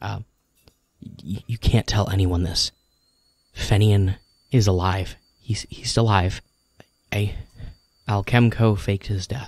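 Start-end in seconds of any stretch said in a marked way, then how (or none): 1.5-9.5 confiding, hushed half-whisper. Voicing a researcher telling the players a secret: half-whispering a secret. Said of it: "she kinda whispers to you".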